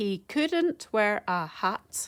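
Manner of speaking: very slow, counted out syllable by syllable. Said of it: "So if you count the syllables".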